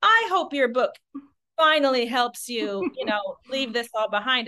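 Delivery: shaming, reproachful tone.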